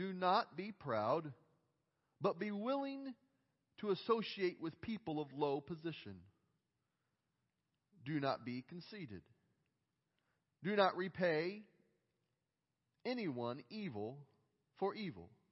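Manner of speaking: deliberately slow reading aloud, as slow as possible. Reading a Scripture passage aloud while a group reads along: very slow reading. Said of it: "I'm going to read it as slow as I possibly can".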